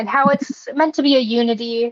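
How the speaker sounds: ordinary delivery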